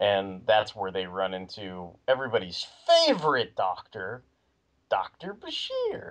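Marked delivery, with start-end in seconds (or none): 4.9-6.1 high, slow facetious delivery. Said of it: "I say with a facetious tone".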